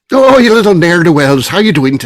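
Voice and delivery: put-on Irish accent. Host opening a St. Patrick's Day show, greeting the guests in a put-on Irish accent. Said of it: "That was actually a good accent".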